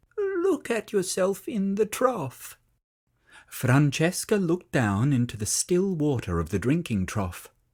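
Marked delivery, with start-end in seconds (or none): 0.2-2.6 tiny, small, slightly high little voice. A narrator reads the smallest sheep speaking to Francesca, Barney's small voice. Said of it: "he said in his small voice".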